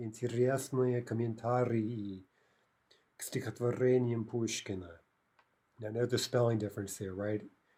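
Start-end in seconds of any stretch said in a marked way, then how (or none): 0.0-4.9 deliberately drawn-out, very slow, careful delivery. Teaching a russian plural inside an example phrase: really slow. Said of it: "If we say it really slowly".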